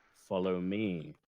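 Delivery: very low, toneless, level monotone. A game master voices a figure leading the party through the tavern, monotone. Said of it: "in a monotone voice says".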